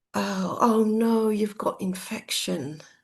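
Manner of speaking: slow, really disappointed, let-down tone. Retelling what a nurse said after a blood test: imitating a disappointed tone. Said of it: "really disappointed".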